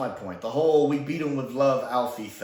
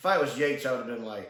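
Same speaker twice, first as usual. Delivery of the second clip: normal talking voice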